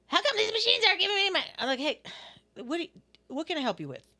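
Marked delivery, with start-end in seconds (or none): 0.1-1.4 very high, shrill, complaining yell. Retelling how people coming in start yelling at the speaker, imitating a yelling customer. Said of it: "especially when they start yelling at you".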